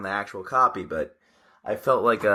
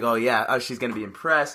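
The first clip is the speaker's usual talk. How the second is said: ordinary talk, nothing marked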